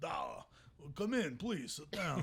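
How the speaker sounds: mock Russian, Eastern European accent. Retelling how restaurant staff welcomed them in: imitating a Russian accent. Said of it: "very super Russian or somewhere Eastern".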